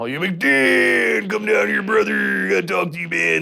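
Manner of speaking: rough, high wrestler voice. Retelling how a downstairs neighbor talked: imitating Macho Man Randy Savage voice. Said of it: "he talked like the Macho Man Randy Savage".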